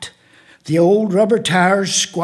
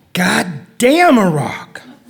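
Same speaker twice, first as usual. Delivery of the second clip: put-on brash, impatient young man, swooping pitch. At a poetry reading, the poet retries the opening line in an impatient young man's voice. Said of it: "heard in a young man's voice".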